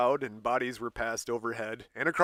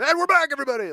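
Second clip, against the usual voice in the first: very loud, very high-pitched radio host announcer voice; 13 semitones higher, 8 dB louder than usual. Showing how an announcer would return from a break: announcer voice. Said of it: "I like talking like an announcer".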